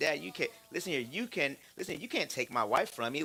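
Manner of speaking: usual speaking voice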